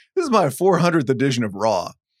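ordinary delivery

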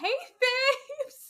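put-on squeal, very high and loud. Quoting Amber pretending to be Joy: imitating Amber doing Joy's voice. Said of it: "the way she, like, does her voice".

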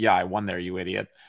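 play-acted, dry, icy, stone-cold deadpan. Retelling a player's answer to "Have you ever played Evian?": imitating a stone-cold reply. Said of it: "she looked at me stone cold and goes".

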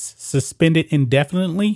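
ordinary talk

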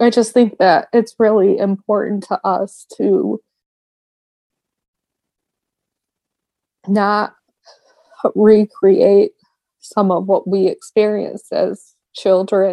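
tearful, crying while talking. Answering another speaker who asks why they are crying: crying while talking. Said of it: "I noticed you're crying".

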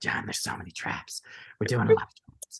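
wild, crazy-sounding put-on voice. Retelling what a woman said to him, imitating her crazy voice. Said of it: "She has this like crazy voice".

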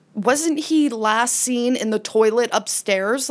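ordinary talk

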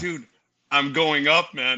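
imitated tearful, crying voice. Retelling a FaceTime call to a brother: imitating own past crying voice. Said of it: "Why are you crying?".

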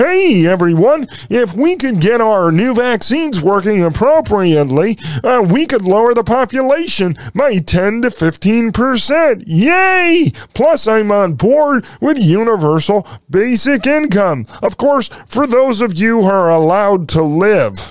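crazed, demented frog puppet voice, high pitched. Acting out someone's statement, talking like a demented Kermit the Frog. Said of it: "talking like a demented Kermit the Frog".

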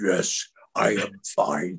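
whispery, hushed, breathy put-on character voice. Retelling how a man asked if he was okay, answering: put-on voice. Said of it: "I just did the voice and I went".

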